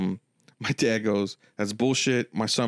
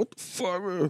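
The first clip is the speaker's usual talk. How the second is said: put-on crying, words forced out through tears, high-pitched; 8 semitones higher, 5 dB quieter than usual. Retelling how a brother came out of the pawn shop: imitating someone crying.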